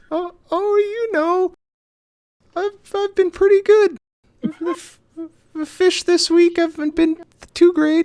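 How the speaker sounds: put-on very high, loud old-lady granny voice. Asked to do a granny voice, a player answers as Ida, in granny voice. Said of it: "Do your granny voice".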